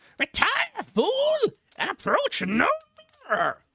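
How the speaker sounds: bad, very high, booming parrot voice. Reading a story aloud, voicing the bird trying to frighten her; thundering bad parrot voice. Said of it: "crying in a thundering tone".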